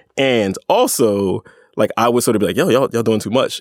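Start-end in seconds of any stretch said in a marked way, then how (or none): none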